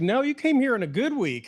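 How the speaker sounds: beautiful, high, put-on Texas drawl, words stretched. A speaker retells a woman's reply after they moved there, imitating a Texas drawl. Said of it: "she's got a just beautiful Texas drawl".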